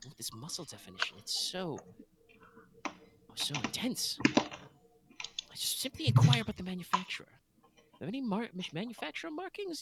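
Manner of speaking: whispered, breathy, admiring murmur under the breath. Game master voicing a woman admiring the player's claymore, muttering under her breath. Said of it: "muttering under her breath".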